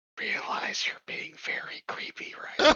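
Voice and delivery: very slow whisper, leaned in close. Playing a character who leans in to a companion's ear: whispering in character. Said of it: "I'll just lean in and whisper in his ear".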